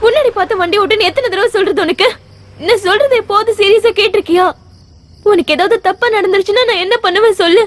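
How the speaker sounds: high-pitched, tearful, angry scolding tone. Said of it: "கோபப்படாத என்ன?".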